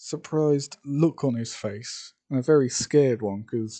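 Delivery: ordinary delivery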